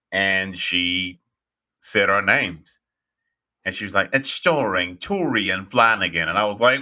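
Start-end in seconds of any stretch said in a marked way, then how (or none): 4.1-6.3 put-on British accent. Recalling a woman announcing their names after a presentation, quoting in a British accent. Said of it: "she had a British accent".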